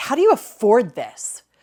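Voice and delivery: spiteful, venomous tone. Retelling what a friend said after seeing her car in the garage, imitating a venomous tone. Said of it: "with so much vitriol and so much venom".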